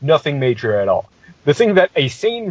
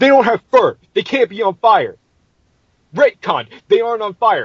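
screaming, insistent, yelled-out rant; 7 semitones higher than usual. Retelling how a man flipped through the book and pointed at the rats, imitating him screaming. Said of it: "Because he is screaming".

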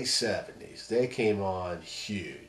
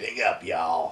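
gruff put-on voice throughout. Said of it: "He had that gruff voice".

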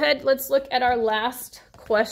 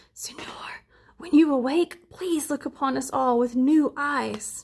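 murmuring, murmured delivery. A child kneels over a sleeping man and speaks in his ear, murmured. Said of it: "He murmured in his ear".

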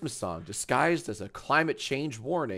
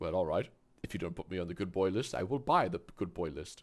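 clumsy, bad put-on voice pitched low; 5 semitones lower, 4 dB quieter than usual. Imitating Musk bargaining over the naughty list: Elon Musk impression. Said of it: "I can't do a Musk impression".

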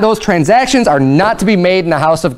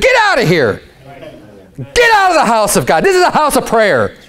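play-acted heated, righteous anger with swooping pitch; 4 semitones higher than usual. Acting out Jesus driving people from the temple: acting out angry shouting. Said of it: "he comes in and he's angry".

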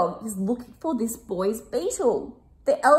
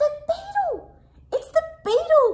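very high, squeaky little hedgehog voice. Reading a children's story aloud, the narrator gives the hedgehog's line in a squeaky hedgehog voice. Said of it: "He squeaked".

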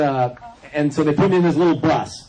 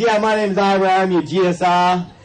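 put-on thick, heavy, slow, unhurried New York accent; 4 semitones higher than usual. Retelling a guy standing up to introduce himself, in Ira's heavy New York accent. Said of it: "He's got this heavy New York accent".

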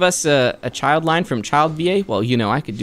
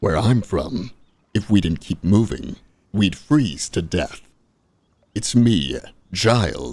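deep, very low character voice; 8 semitones lower than usual. Asked by another person to do the deep voice: deep Childe impression. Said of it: "my Child impression in the deep voice".

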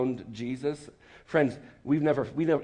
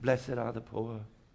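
soft, dull, bland fake English accent; 2 semitones lower, 5 dB quieter than usual. Mocking how Jesus preaches in the movies: movie Jesus fake English accent. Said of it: "where did that fake English accent come from?".

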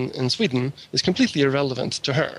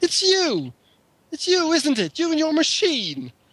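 play-acted furious outburst, squeaky and very high; 14 semitones higher than usual. Retelling how a hippie confronted a friend: imitating an angry hippie girl. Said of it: "this very angry hippie girl comes up".

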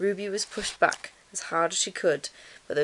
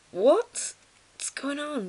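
groggy, high-pitched, sleepy groan; 8 semitones higher than usual. The big bear, woken in the night by Ruby's shout: sleepy groan. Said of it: "groaned the big bear".

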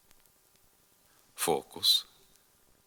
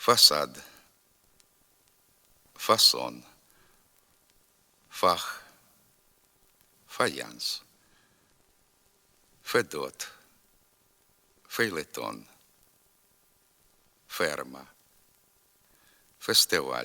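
slow, each word spaced, long pauses between. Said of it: "Тепер повторюйте за мною".

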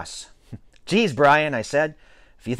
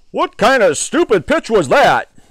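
loud, high-pitched shouting voice; 7 semitones higher, 7 dB louder than usual. A father, just hit on the head by his son's pitch, shouts. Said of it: "Shouted my father".

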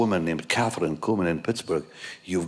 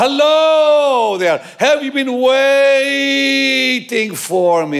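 theatrical, very high, loud, slow, drawn-out dramatic delivery; 12 dB louder than usual. Retelling how Catherine talked in person: imitating Catherine's dramatic voice. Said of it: "she said".

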